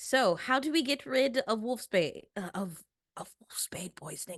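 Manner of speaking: half-whispered, hushed. Player in a role-playing game, half-whispering in case others are listening. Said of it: "I'm whispering because I don't know if they're listening".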